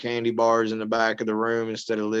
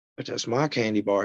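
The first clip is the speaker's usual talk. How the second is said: ordinary talk, nothing marked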